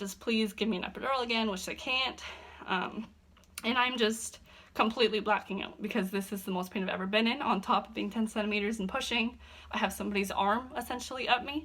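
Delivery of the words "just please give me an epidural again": acted out pleading, begging tone. Retelling begging them while in excruciating pain during labour: acting out begging. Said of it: "like I'm begging them".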